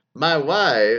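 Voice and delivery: loud put-on impression voice. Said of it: "in his best Borat impression".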